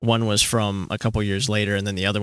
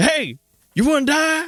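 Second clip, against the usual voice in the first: mock very high, drawn-out, playful joking tone; 4 dB louder than usual. Retelling what was said to annoying friends at school: imitating own past mock threat. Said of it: "And I'd be like".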